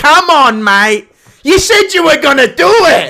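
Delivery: shrill, very high yelling shout. Imitating a friend's voice, pushing for a preview: imitating Paul shouting. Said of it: "He does that one".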